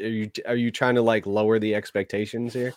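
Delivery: ordinary delivery, nothing marked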